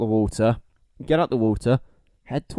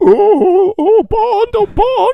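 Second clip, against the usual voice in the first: shrill, very high, loud, slow, drawn-out underwater voice; 8 dB louder than usual. Suggesting how a henchman fakes passing out, then calls to Bond: henchman's underwater voice. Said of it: "he be using that voice to speak underwater?".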